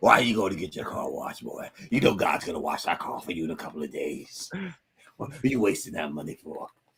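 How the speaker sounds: hushed, quiet, chiding, scolding voice. Retelling how his uncle questioned him about washing his car, imitating uncle Boyd. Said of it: "That's the way my uncle was".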